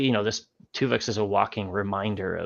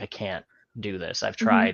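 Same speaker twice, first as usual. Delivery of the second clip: mock crying, tearful pleading. Recapping an episode scene, the speaker quotes a character, imitating someone crying. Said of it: "she's like crying and she's like".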